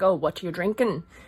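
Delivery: put-on Irish accent, girlish voice. Retelling an Irish girl coming up at a bar in Vancouver, Irish accent. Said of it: "I'm so sorry if that's wrong".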